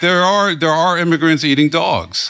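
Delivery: high, put-on earnest tone masking sarcasm. Listing complaints to the other speakers as a joke: mock-serious sarcasm. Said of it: "Chris is being sarcastic".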